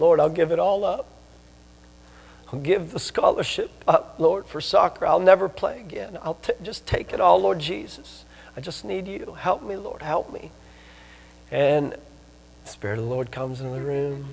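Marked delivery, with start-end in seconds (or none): 0.0-10.5 mock heaving, tearful, broken sobbing voice. Retelling the speaker's own past prayer to the lord: retelling a sobbing plea. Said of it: "I was sobbing".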